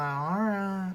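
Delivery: mopey, really sad, deflated, let-down, resigned tone. Girl retelling her reply when her dad refused to play Minecraft, imitating her own sad voice. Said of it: "In like a really sad voice".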